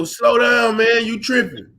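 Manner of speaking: ordinary talk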